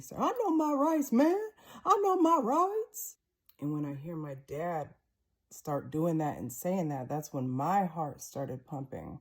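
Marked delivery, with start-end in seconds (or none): 0.2-3.2 very high, loud voice, jumped up an octave. Retelling the speaker's dad answering a man at the door, Dennis's voice up an octave. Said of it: "my dad's voice go up an octave".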